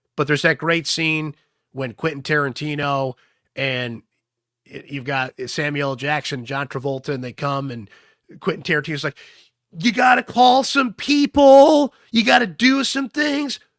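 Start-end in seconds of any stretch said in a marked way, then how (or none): 9.8-13.6 very high, very loud, drawn-out yell. Retelling a Pulp Fiction scene where a character yells at Jules: imitating Quentin Tarantino yelling. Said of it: "He's like yelling at Jules".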